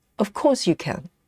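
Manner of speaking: confident, firm, certain, no-doubt tone. Retelling what a lady said when you doubted yourself, imitating a certain, confident tone. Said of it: "that certainty, that tone of voice".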